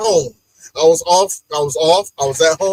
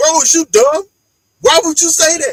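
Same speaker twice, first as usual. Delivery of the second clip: put-on, high-pitched hollering; 8 semitones higher than usual. Retelling reacting to the TV after rewinding: imitating yelling at the TV. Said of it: "I'm yelling at the T V now".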